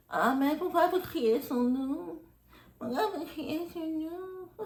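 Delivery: soft, high, passive-aggressive lady's voice, "nom" drawn out. Recounting a lady's passive-aggressive remark, imitating a lady's voice. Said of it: "il y a une voix de dame qui dit".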